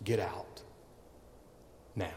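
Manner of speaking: quiet whisper, close to the ear. Acting out a scene of leaning down to a man's ear: quietly spoken. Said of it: "and quietly said in his ear".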